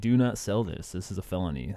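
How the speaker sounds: normal talking voice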